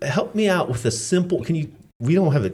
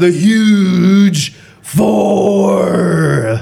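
very loud, booming, pitched-up put-on wrestler bellow; 6 semitones higher, 9 dB louder than usual. A host introducing the next segment to a guest, in a wrestler voice. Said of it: "That's my wrestler's voice".

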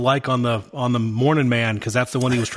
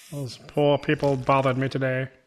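put-on snooty, snobbish old-money millionaire voice; 4 dB quieter than usual. Playing around with a voice from the last episode, in a Thurston Howell III-esque voice. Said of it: "Thurston Howell III esque".

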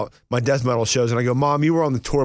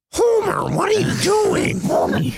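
put-on cartoon mom voice, much higher pitched. After another speaker says Mimi might sound like Marge Simpson, Marge Simpson voice. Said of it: "No, Marge Simpson is".

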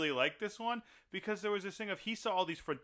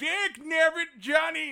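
angry outburst, higher pitch and louder; 12 semitones higher, 10 dB louder than usual. Retelling what the crotchety guardian angel said: imitating an angry angel. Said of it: "he was mad".

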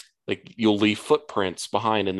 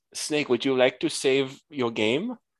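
put-on thick Chinese accent, higher pitch; 5 semitones higher than usual. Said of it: "the thickest Chinese accent".

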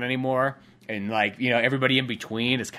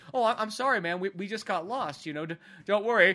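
calm, slightly high, stammering mellow hippie voice; 7 semitones higher than usual. Retelling a film scene, imitating calm hippies. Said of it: "the hippies are actually being very calm".

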